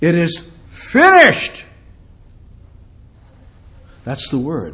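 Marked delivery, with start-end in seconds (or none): 0.0-1.6 high, slow, loud and strong cry of victory. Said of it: "he cried out in a loud, strong voice".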